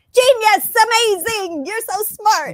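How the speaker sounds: put-on, over-the-top, very high, loud gushing flattery. Imitating a language teacher who keeps praising: imitating gushing praise. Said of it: "constantly telling me how smart I am".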